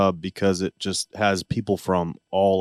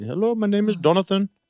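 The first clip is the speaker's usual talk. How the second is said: heavy put-on Indian accent, very high; 12 semitones higher than usual. Imitating a phone caller trying to get money, in a thick indian accent. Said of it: "like a real thick Indian accent".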